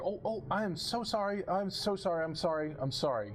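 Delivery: flustered, apologetic maid voice. Voicing a ghost housekeeper who pops out and apologizes. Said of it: "immediately you hear".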